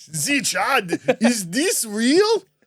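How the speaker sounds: put-on Austrian action-hero accent. Joking with the others by repeating a line: Arnie accent. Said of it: "your accent's really good for an Arnie".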